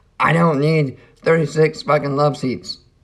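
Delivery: put-on shouting from the start. Retelling how they start right off the bat: imitating someone yelling. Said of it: "coming after me and yelling at me".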